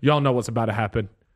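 mock ice-cold delivery. Retelling what he said walking past the bench, imitating a cold delivery. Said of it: "so cold the way he says it".

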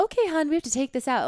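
clumsy put-on British accent. Retelling what the older woman who flagged her bag said, in an attempted British accent. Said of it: "I can't do a British accent".

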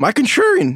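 voice cracking. Asked by the host to sell his contrarian pick, voice cracking. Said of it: "is that a voice crack?".

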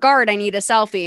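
ordinary delivery

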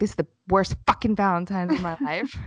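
put-on upset voice. Retelling what he said after the shower, imitating someone upset. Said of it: "he is so upset".

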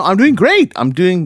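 gushing overexcited voice. Answering the other host who asked how things are going: too excited. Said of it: "that was too excited".

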